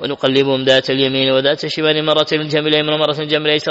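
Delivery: ordinary delivery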